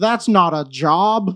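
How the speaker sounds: mocking, grumpy old man voice. Teasing a friend, imitating a grumpy old guy who dismisses jobs. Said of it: "you sound like one of those old guys who are like".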